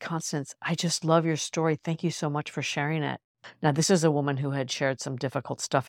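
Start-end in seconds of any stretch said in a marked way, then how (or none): 0.0-3.2 mock tearful, teary voice. Retelling what a woman seated beside the speaker said, imitating someone tearful. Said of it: "with tears in her eyes".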